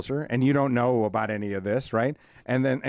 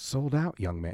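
bad put-on British accent, higher; 2 semitones higher, 8 dB quieter than usual. A comedian retells what a fellow performer said backstage before a show, in a bad put-on British accent. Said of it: "I can't do the accent".

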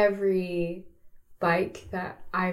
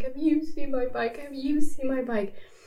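put-on sobbing voice, higher, slower; 6 semitones higher than usual. Retelling going house to house about a stolen bike, imitating own sobbing. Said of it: "And I'm sobbing".

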